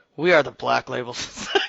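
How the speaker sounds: very loud, deep, rumbly low voice. Reading a guild post aloud after being asked for a deep, rumbly voice: deep and rumbly voice. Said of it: "Deep and rumbly".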